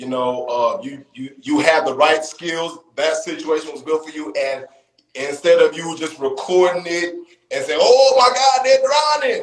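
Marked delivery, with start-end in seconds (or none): 7.8-9.4 put-on Louisiana accent, much higher and louder. Praising a young man, voicing what he could have said instead: attempted louisiana accent. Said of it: "I was going for Louisiana".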